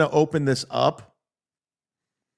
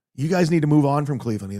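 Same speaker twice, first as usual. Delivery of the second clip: ordinary talk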